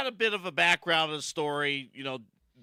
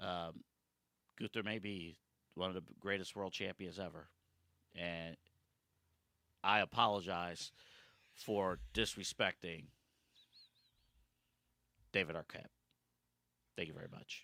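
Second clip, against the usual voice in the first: fake solemn, serious tone, lower and quieter; 9 semitones lower, 13 dB quieter than usual. Giving a formal on-camera apology as a joke: mock serious apology. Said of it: "one serious moment".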